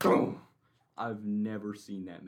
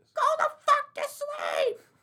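high, shrill, full-volume scream; 8 dB louder than usual. Complaining about a sister yelling at her toddler, imitating her scream. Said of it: "screaming at him until 1 a.m".

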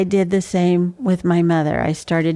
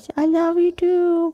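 put-on tiny, very high little girl voice; 11 semitones higher than usual. Retelling the couple's little daughter answering her father, in a little girl voice. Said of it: "I heard her in this little girl voice".

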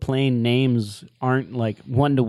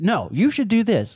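put-on scolding yell, higher pitch; 8 semitones higher than usual. Retelling how a heroine yells at pilots like a mom: imitating yelling like a mom. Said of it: "she starts yelling at 'em like a mom".

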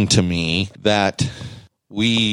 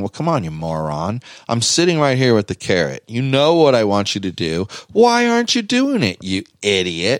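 mock sarcastic dog inner voice, swooping pitch. Voicing what the dog thinks while staring: voicing the dog as sarcastic. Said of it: "her voice is in her head is saying".

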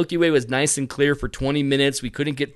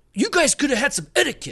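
put-on angry man voice, higher; 11 semitones higher than usual. Retelling how a man grabbed his light and snapped at others: imitating an angry man. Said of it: "he's, like, pissed".

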